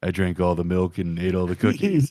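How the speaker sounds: grim, very dark put-on voice. Describing a character telling a lie, in a super dark voice. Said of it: "in like some super dark voice".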